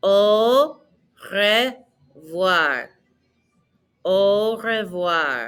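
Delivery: very slow, drawn-out delivery. Teaching a French phrase for learners to repeat, very slow. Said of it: "So very slowly".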